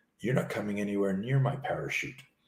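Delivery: mock-sly grinning delivery. Retelling a man's reply to the speaker's offer of help, imitating an evil smile. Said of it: "with a little like evil smile and he goes".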